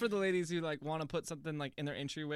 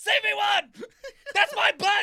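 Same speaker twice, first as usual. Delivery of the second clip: shrill, very loud, high, drawn-out booming yell; 13 dB louder than usual. Acting out a man who could not stop yelling: imitating him yelling. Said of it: "all he did was yell".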